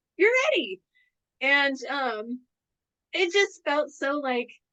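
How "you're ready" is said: very high, acted-out little-kid delight, excited cheer. Retelling what Lama said after a practice talk: imitating Lama, excited like a little kid. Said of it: "almost like a little kid".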